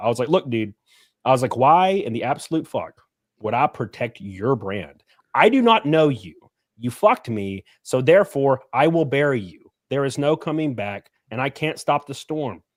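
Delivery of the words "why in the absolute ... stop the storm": put-on very stern, firm, no-nonsense fatherly tone. Retelling a talk he gave a guy, mock-stern dad talk. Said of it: "very stern dad talk".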